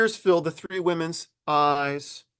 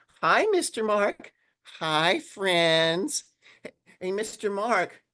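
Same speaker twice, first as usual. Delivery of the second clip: squeaky, high little mouse puppet voice; 5 semitones higher than usual. The puppet greets the host and the kids in Charlie the Church Mouse voice. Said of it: "it's Charlie the Church Mouse".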